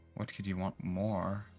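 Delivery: quiet muttered whisper under the breath. Acting out a character's line while retelling a game: whispering under breath. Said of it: "whisper under my breath".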